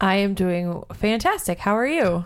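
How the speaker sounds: flat, robotic, robot-like tone. A wife answers her husband's greeting on their hundredth show, robotic delivery. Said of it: "you always sound so robotic when you say that".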